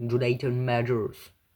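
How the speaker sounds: attempted American accent, not quite convincing. Speaking French and admitting you lack the accent, try the actor's name in an attempted American accent. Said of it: "je n'ai pas l'accent euh, américain".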